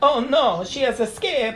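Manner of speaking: put-on French accent. Voicing a movie character while watching together: put-on French accent. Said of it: "I don't know where that accent came from".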